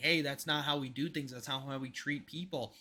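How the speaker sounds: plain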